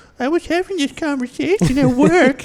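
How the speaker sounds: mocking echo in a very high-pitched voice. Showing how you repeat what she just told you, in a mocking Adam Sandler voice. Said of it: "high pitched or super low pitched. mocking".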